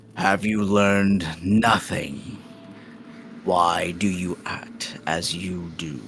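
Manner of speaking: loud, booming giant's voice. A towering Goliath scolds the party, booming Goliath voice. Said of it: "he'll just speak to you in a, a booming voice and say".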